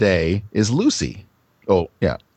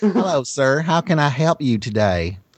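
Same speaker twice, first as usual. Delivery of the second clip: put-on Southern accent, pitched up; 6 semitones higher than usual. Voicing a southern woman greeting a man: southern accent. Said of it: "she's Southern".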